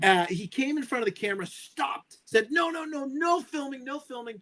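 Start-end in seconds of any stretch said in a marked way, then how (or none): 2.5-4.4 put-on high, insistent, angry yell. Retelling a man who stepped in front of the camera, imitating an angry yell. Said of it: "he wouldn't stop yelling".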